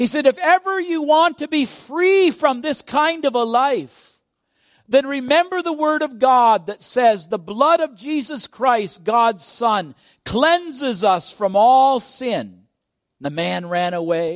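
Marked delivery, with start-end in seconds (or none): 0.3-12.6 play-acted, very high, loud yell. Retelling a call after a robber running away: retelling a yell. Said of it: "he yelled out to him".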